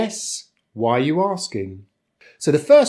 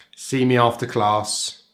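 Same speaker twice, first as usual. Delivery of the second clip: ordinary delivery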